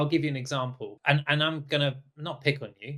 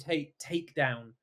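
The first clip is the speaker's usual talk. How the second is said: ordinary talk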